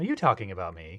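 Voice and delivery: acted-out flirtatious tone. Re-enacting own past question when asked: imitating own smiling question. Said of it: "you need to actually say it in your voice because it was like the smiling".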